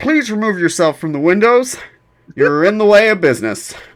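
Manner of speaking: voice over crackling radio. Storyteller voicing a radio message the players hear, in a crackly radio comm voice. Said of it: "in like a crackly uh, radio comm voice".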